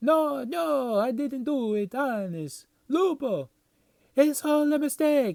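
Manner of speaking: very high, loud, thick put-on Italian accent. Reading a comic cover character's speech bubble aloud: put-on italian accent. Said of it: "this guy has, like, an Italian accent".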